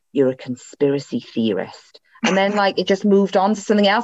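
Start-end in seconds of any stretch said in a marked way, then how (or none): 0.1-2.0 slow, hushed whisper with drawn-out words. Retelling a dream where Nicola Sturgeon grabbed their arm: imitating Nicola Sturgeon whispering. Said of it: "she whispered to me".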